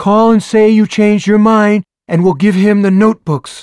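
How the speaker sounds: very high, very loud bellowing shout. Narrator reads a woman leaning toward a man to shout, bellowing. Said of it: "She leans toward Hodges and bellows".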